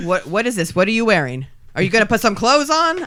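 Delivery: put-on typical dad voice.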